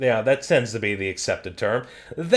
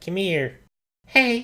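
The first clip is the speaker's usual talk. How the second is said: cute, high, small pitched-up voice; 7 semitones higher than usual. Describing a side-scrolling platformer, imitating a character: Abe's cute voice. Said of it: "Abe with his cute voice is like".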